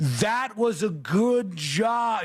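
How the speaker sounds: very slow, very high, exaggerated over-enunciation. Retelling talking to a deaf worker, imitating own over-enunciating. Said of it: "over enunciating with my mouth".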